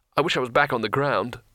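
ordinary delivery

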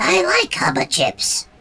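very high, sing-song, squeaky little voice. Reading a story aloud, voicing an unnamed character's reply: high-pitched voice. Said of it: "came a high-pitched voice".

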